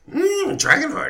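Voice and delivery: very high, witchy voice. Voicing a witch as players offer dragon parts: witch voice sounding like Yoda. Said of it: "She's starting to sound like Yoda".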